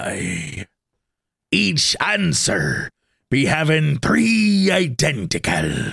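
talking like a ship's pirate. Reading out a decoded message, having been told to read it like a pirate. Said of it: "you got to read it like a pirate".

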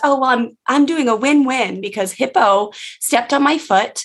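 put-on very small, high-pitched young child's voice. Retelling what a tiny girl told her mom while playing, very small, young voice. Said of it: "in very, very like small, young voice".

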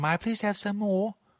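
heavy put-on English accent. Suggesting a way to ask for candy, thick english accent. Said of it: "in your thick English accent".

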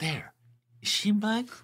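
very high, hushed half-whisper. Retelling a scene where the character grabs a man: imitating Todd half-whispering. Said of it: "you just hear him whisper".

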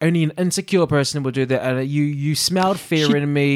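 ordinary delivery

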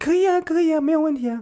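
voice jumped an octave, very high. Speaker acts out a reply when asked to drive people home: much higher pitch. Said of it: "回答的时候声音都是高8 度的".

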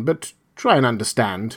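plain reading voice

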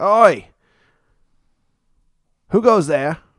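loud, high-pitched shout. Narrator voices a gate guard challenging the arriving wagon, guard yelling. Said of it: "one of the guards yells out".

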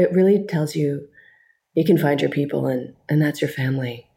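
acted flat, expressionless deadpan delivery. Speaker recalls pretending to do the EPK for Fast and the Furious, retelling a deadpan delivery. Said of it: "I did it very deadpan".

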